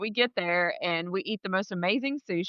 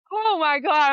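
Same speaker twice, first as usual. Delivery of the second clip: high, loud, play-acted panicked cry; 9 semitones higher, 7 dB louder than usual. Retelling being in a car at top speed: retelling own panicked freakout. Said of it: "I'm just freaking out".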